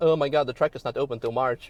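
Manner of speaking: ordinary delivery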